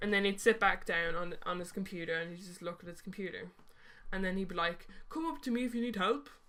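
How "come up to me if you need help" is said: put-on heavy, thickly laid on Irish accent, pitched up. Quoting a man at his computer offering help, thick Irish accent. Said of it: "I'm doing this accent because he's he has a very thick Irish accent".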